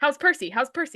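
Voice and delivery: high, annoying, nagging, badgering pestering. Acting out an imagined scene where Annabeth keeps asking: annoying pestering voice as Annabeth. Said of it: "so annoying".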